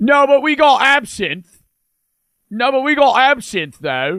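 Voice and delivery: put-on British accent. Telling a joke scene set in the UK, in a put-on UK accent. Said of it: "I'm still gonna use the U K accent".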